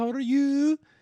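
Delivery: very high put-on Brazilian accent, drifting into Swedish. Retelling what the downstairs neighbor says at every meeting: imitating neighbor's Brazilian accent. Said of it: "I made her Swedish or whatever".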